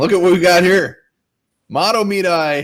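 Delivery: high yell at full volume. Greeting a newcomer joining the conversation, yelling. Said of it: "That's because I'm yelling".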